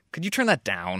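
attacking, accusing tone. Demonstrating how asking someone to turn the volume down can sound, in an accusatory tone. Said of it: "Which starts to become accusatory".

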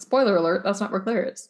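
ordinary talk

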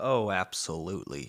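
sounding sarcastic. Answering whether they would take kids to the farm: sounding sarcastic. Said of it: "That sounded sarcastic".

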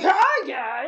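startling, out-of-nowhere, loud and high. Describing a man who comes over to busy people and greets them, retelling a loud greeting. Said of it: "and it's really loud".

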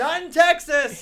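put-on yell. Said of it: "he was not pleased".

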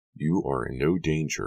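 plain

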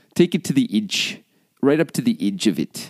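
put-on Kiwi New Zealand accent. Trying an accent on the spot, attempting a New Zealand accent. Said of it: "I can do New Zealand a little bit".

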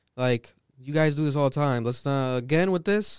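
usual speaking voice

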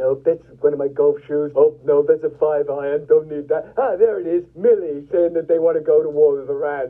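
low, mock voice, muttering. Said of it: "going through those kinds of".

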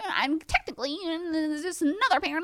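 high, fast know-it-all voice, rattled off. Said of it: "people I don't know being like".

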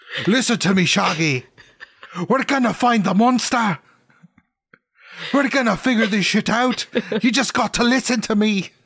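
put-on Scottish accent. Playing a character in a role-play, speaking to Shaggy, in a Scottish accent. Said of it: "now you're Scottish".

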